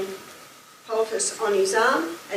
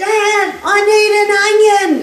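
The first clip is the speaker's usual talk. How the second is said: put-on very high, very loud child's yell; 11 semitones higher, 13 dB louder than usual. Retelling how a six-year-old son yelled out: imitating a child yelling. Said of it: "he yelled out".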